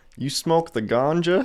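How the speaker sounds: stiff voice trying street slang. Imagining a cop trying to sound casual asking about weed: imitating a cop trying slang. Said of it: "Imagine the cop trying to say it like the slang".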